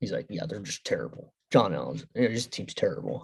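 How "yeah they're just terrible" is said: mock mutter under breath, lower and quieter. Speaker retelling a man's aside while others talk about hating the Steelers, under his breath. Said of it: "John Allen's just like under his breath".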